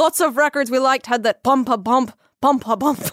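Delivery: attempted put-on Irish accent. Speaker repeats a quoted line, trying it in an Irish accent. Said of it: "should I try this in Irish accent?".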